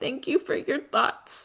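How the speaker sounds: tearful, breathy whisper. Retelling Amaya's reply to harsh words, imitating Amaya crying. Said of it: "with tears streaming down her face".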